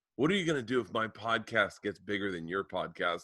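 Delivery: flat, serious delivery. Retelling a question she asked after her first podcast downloads: imitating a dead serious question. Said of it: "she looks at me dead serious".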